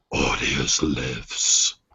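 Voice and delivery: whispered, low, breathy, growling close-up voice. Game master voicing a twelve-year-old pressing his face close to a player: low growling voice. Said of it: "in this low, growling voice, he goes".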